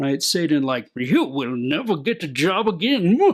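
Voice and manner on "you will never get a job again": classic, swooping cartoon-villain voice. Showing how to say a practice line to yourself, in a cartoon villain voice. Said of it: "Classic uh, cartoon villain".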